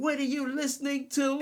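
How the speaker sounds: put-on high scream. Retelling how their mom burst in on the loud music, imitating mom screaming. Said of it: "she's like screaming, screaming".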